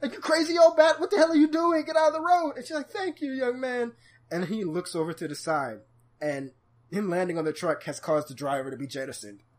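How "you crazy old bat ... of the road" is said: shrieking, very loud, shrill full-volume yell. Retelling how he yelled at an old woman in the road, retelling a yell. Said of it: "he just starts yelling at her".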